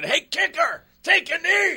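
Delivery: put-on very high, drawn-out screaming. Recalling a man at practice screaming at him on the sideline, retelling someone screaming. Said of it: "he's screaming".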